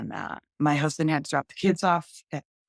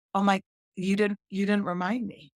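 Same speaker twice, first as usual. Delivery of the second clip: ordinary talk, nothing marked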